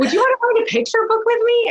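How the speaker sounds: high, fast, excited, eager voice.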